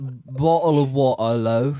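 put-on British accent.

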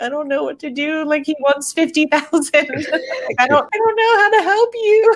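nervous robot voice. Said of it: "he's just so nervous the whole time".

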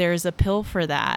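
ordinary talk

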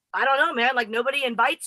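ordinary delivery

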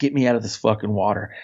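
ordinary delivery

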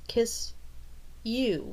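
words spluttered out, sputtering and caught off guard. Struck dumb, she finally replies, sputtering. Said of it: "she sputtered out eventually".

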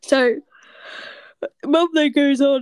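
speaking through a yawn. Telling a story about mum, yawning while speaking. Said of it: "I'm yawning".

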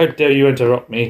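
normal talking voice

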